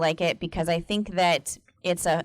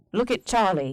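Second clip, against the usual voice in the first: put-on sweet British accent in a nature-documentary narrator voice. Imitating a documentary narrator for the other speaker, sweet British accent. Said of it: "like a really sweet British accent".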